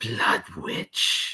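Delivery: whispered, hissing delivery. Voicing a matriarch addressing the players as they step out: hissing. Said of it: "she kinda hisses and says".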